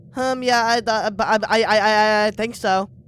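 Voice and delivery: halting, nervous stammering speech. A customer buying candy answers the cashier, stuttering nervously. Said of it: "Can you stop stuttering?".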